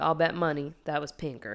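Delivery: put-on thick Mississippi accent. Retelling what a guard said about who did it: thick Mississippi accent. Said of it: "thickest Mississippi accent".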